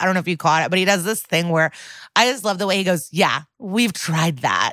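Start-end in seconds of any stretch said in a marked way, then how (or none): 3.1-4.7 put-on smug, dismissive, condescending, superior tone. Showing how the dad says the line: imitating a smug, condescending reply. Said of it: "nods in this really smug, condescending way".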